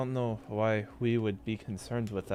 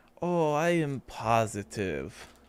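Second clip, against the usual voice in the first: heavily sarcastic, swooping sing-song delivery. A character, questioned about a village medicine shipment, insists on it; sarcastic. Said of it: "you made that voice and that sounded very sarcastic".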